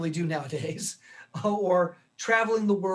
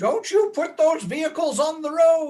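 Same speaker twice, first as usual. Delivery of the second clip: put-on very high-pitched, loud elderly voice; 10 semitones higher, 6 dB louder than usual. Researcher imagining older people objecting to autonomous vehicles, doing an impression of an old person. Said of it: "that's my best impression of someone who's old".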